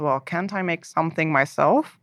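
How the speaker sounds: ordinary talk, nothing marked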